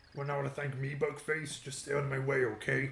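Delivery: very loud, booming, blustering villain voice at full volume. Voicing a character's line in a Bowser voice. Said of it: "That's a good voice for fucking Bowser".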